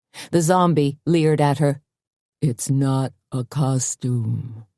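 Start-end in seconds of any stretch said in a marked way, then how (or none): 2.4-4.5 very slow, low, menacing, threatening hiss. Reading a story, a zombie selling tickets answers Tony in a low, threatening hiss. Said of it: "he hissed in a low, threatening voice".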